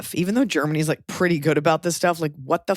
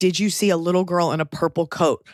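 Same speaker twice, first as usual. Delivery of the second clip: ordinary talk, nothing marked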